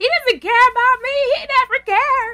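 high, loud screaming. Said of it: "to her screaming".

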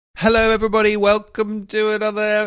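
very high, proclaiming town crier voice. Host opening an episode; town crier voice. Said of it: "I sound like a town crier".

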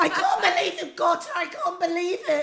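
high, loud, overjoyed laughing-crying gush of disbelief.

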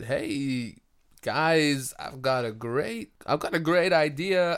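deliberate, stretched-out speech. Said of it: "that's pretty good impression".

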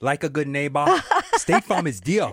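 heavy, put-on Austrian accent. Cutting in before the other speaker, put-on Austrian Schwarzenegger accent. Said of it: "that wasn't my best Schwarzenegger".

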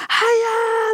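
high, loud screaming across a distance. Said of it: "granne ute på balkongen skrika".

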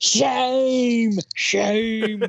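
thick ocker Australian accent, drawn-out "shame". Recalling a mock Parliament session, showing what to call out in a strong ocker accent. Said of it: "in a real ochre accent".

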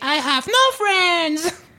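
sweet, cute retro robot voice, high, slow, drawn out. Retelling how a remote-controlled robot greeted people: cute old-fashioned robot voice. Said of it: "cette voix trop mignonne de robot d'à l'ancienne".

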